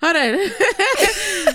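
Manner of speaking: high, loud laughing outburst through the words.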